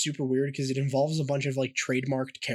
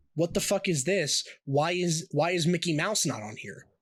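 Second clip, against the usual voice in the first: put-on upset yelling outburst; 3 semitones higher than usual. Retelling someone's reaction on seeing the pamphlet, mock-upset outburst. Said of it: "he's like getting really upset about it".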